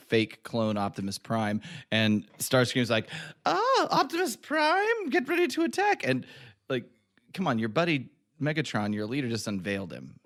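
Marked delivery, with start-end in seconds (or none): 3.5-6.1 very high, slow, floating fancy-lady voice. Quoting Starscream greeting the fake Optimus Prime: fancy lady Starscream voice. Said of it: "fancy lady version of Starscream".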